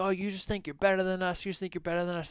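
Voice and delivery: high-pitched accusing yell. Retelling a group of friends yelling at the speaker: imitating people yelling. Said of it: "they start kinda yelling at me, like".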